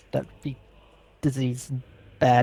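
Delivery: muttered quietly. Muttering a warning to another character in the game, under the breath. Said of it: "under my breath say".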